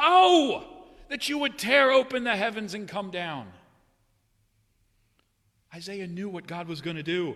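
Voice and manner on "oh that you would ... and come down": very loud screamed words. Retelling the prophet Isaiah crying out to God: Isaiah screaming, imitated. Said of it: "and he screams".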